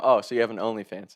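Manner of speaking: normal talking voice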